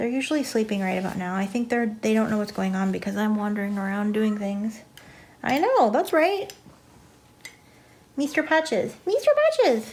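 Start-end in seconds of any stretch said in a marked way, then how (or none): 5.4-9.9 high, rising kitty-cat voice. Speaker talking to their cat mister patches in a high-pitched kitty cat voice. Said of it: "that's my kitty cat voice".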